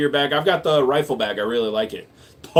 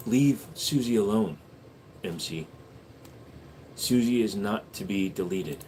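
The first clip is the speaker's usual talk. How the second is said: soft, hushed ASMR whisper. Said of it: "A S M R for one whole minute".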